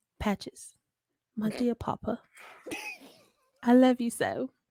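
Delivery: sing-song put-on British accent. Speaking as a daughter to her papa Patches, British accent. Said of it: "say thank you to Patches in your British vo- voice".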